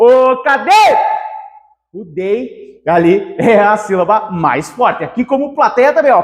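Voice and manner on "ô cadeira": slow, loud call, as if across a room. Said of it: "tem que chamar ela".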